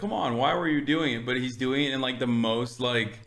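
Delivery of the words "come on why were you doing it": put-on old man delivery.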